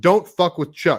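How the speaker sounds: mock roaring bellow. Telling a story, act out what the man shouted, retelling a bellow. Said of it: "he bellowed".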